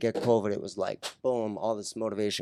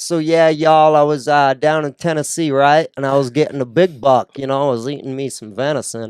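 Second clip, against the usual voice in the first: very loud put-on southern accent; 4 semitones higher, 10 dB louder than usual. Imagining talking like someone who adopts it on camera, in a southern accent. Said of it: "Imagine talking like that".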